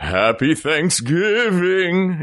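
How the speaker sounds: put-on high, spooky children's-record style voice. Teasing a co-speaker about how they said a greeting, speaker repeats it: mock spooky voice. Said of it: "It was very like, like a spook".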